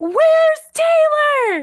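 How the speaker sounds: shrill, very high, very loud yell. Retelling a girl shouting after a man walking away, imitating a girl yelling. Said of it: "this girl yells".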